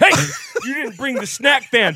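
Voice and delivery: very high-pitched voice. Joking that the line could come from a robber: put-on robber voice. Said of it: "the same words that a robber".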